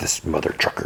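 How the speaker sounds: whispered, hushed, breathy grumble under the breath. Retelling a story, quoting a character's remark: imitating someone muttering.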